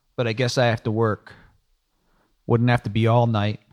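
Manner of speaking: plain reading voice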